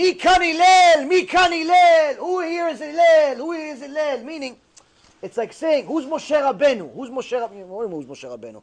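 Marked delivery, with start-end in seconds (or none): 0.0-4.2 put-on scream, higher, louder, slower. Telling how Hillel hears somebody outside his house calling for him; imitating someone screaming. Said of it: "he hears somebody screaming".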